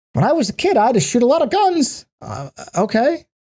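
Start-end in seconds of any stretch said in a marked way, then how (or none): 0.1-2.0 high, bubbly little voice. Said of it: "bubbly little voice".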